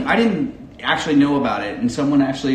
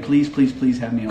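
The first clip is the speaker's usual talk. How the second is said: ordinary talk, nothing marked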